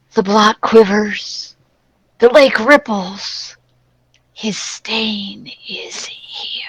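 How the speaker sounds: long, drawn-out stage whisper. Voicing a sound everyone hears on stepping in: drawn-out whisper. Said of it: "a drawn-out whisper that says".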